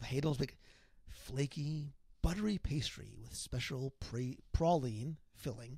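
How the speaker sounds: dramatic read-aloud. Reading a product description aloud as a dramatic reading. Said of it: "I'm going to read a dramatic reading".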